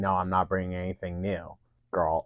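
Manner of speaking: mocking, sarcastic retort tone. Speaker recapping a judged competition, one contestant mocking another's earlier words, retelling a sarcastic line. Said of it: "like very sarcastically saying".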